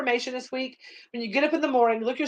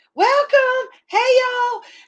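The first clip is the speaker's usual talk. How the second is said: put-on very high-pitched, loud older lady voice; 12 semitones higher, 6 dB louder than usual. Imitating an older lady greeting people whenever the store door opens, high-pitched older lady voice. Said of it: "she had this real high pitched voice".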